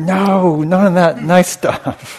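very high, slow, drawn-out yelled shout. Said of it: "he's like".

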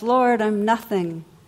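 play-acted, loud, full-throated crying out. Telling a joke, the janitor on the ground before the ark: shouting.

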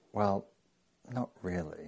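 soft, barely audible half-whisper. Telling a story, quoting the land owner's aside to a teacher: retold half-whisper. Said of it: "he whispers to Christopher".

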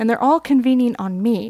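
normal talking voice

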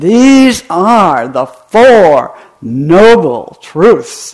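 very loud, drawn-out, slow booming roar. Describing how a teacher announces the Four Noble Truths, imitating a teacher's big roaring voice. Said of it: "he will roar out, he has this big voice".

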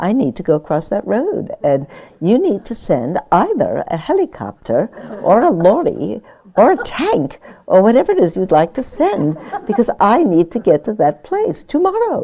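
animated, high put-on British accent throughout. Retelling what a woman said to a military officer about a blocked road, imitating a British accent. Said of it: "so I'd have to do that accent as well".

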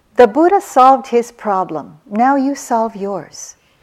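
gentle, mild scolding. Retelling how Munindra used to answer: imitating Munindra, mildly scolding. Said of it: "in a little bit of a scolding way".

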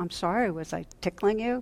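imitated sheepish, apologetic tone. Retelling a doctor apologizing to a laughing patient, imitating a sheepish apology. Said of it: "he says sheepishly".

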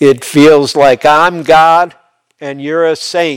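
very loud, sudden, booming, high outburst. Retelling what he suddenly said while being cared for: imitating a very loud voice. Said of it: "all of a sudden in a very loud voice".

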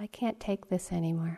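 put-on teeny whispering voice. Recalling a little voice heard after an hour or two, imitating a tiny whisper. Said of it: "like this little teeny whispering bit of words".

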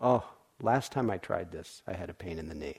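disheartened, let-down, deflated voice. Showing how knee pain turns into discouragement: discouraged tone. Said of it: "You can hear by the tone, discouragement".

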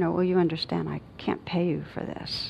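soft, gentle voice. Recalling speaking to a man who arrived at the hotel, retelling saying it very gently. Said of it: "I just said very gently".

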